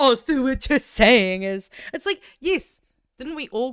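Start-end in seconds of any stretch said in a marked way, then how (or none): 0.0-1.7 mocking imitated tone, louder. Mocking how the interviewer sounded: mocking imitation of the interviewer. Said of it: "Why did he sound so fucking".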